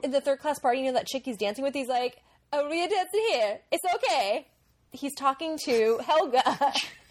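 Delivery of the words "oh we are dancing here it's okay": high, comic, put-on caricature voice. Imitating a film character at a party dance: imitating Fabrizio like Borat. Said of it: "your Fabrizio sounds like Borat".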